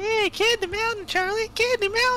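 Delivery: very high, squeaky, goofy cartoon voice. Quoting the cartoon Charlie the Unicorn, the speaker does the unicorns' Candy Mountain voice. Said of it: "It's weird I can do that voice".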